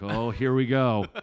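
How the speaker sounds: mock laughing, very loud and very slow, drawn out. Retelling how a room reacted when the speaker came in on crutches, imitating laughing. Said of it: "they all just started laughing like".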